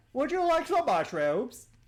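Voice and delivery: very loud, booming, shrill high-pitched character voice. Describing a character they came up with, the speaker performs it in a loud character voice. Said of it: "I talk very loud".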